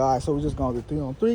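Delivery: fast, casual, offhand throwaway.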